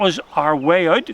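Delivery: ordinary delivery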